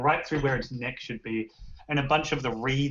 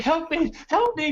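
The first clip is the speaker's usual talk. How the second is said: screaming, much higher, louder, slower; 4 dB louder than usual. A figure running and looking behind himself, screaming for help. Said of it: "And he's screaming".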